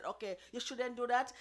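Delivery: ordinary delivery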